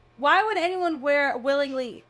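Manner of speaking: loud indignant exclamation. Questioning another speaker's story about nurses: loud. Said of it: "Sorry, I'm so loud".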